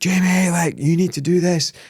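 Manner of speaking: mock yelling. Speaker recalling screaming at a training partner after lost competitions, retelling screaming at jamie. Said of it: "I remember screaming at him".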